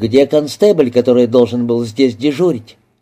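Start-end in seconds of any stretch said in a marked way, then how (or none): none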